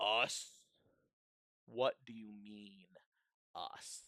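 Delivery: very slow, echoing voice from above, each word drawn out. Voicing an angel whose voice booms down from above: booming echoing voice. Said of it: "this echoing voice boom out from above them".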